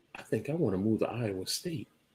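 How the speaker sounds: very quiet, barely audible whisper. Telling the other speaker about moving to Iowa State, whispering. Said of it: "You are whispering".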